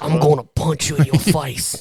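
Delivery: put-on accent slipping into Australian. Podcaster attempting an impression for the co-hosts: Statham impression drifting Australian. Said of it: "he went from being British to Australian".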